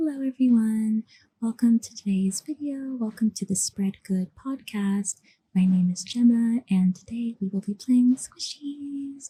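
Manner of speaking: gentle, soft ASMR-style speaking voice. Speaker demonstrates her two asmr voices, showing the soft-spoken asmr voice. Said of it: "if I was doing soft spoken".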